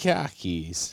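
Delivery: put-on terrible Boston accent. Trying out a Boston accent after being told not to: bad Boston accent. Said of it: "You're terrible".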